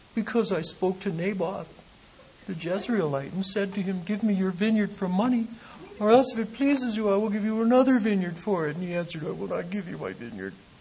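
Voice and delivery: royal-sounding sulk with a pout. Reading the king's reply in a Bible story to listeners, with a kingly pouting sulk. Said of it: "You got to hear the pout in the voice".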